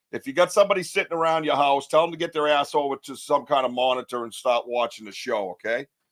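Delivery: ordinary talk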